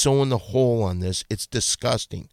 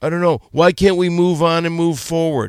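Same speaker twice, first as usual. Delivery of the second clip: loud, high, taunting mocking voice; 6 semitones higher, 6 dB louder than usual. Speaker mimics the person being addressed to mock their excuses: mocking imitation. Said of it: "I'm mocking you".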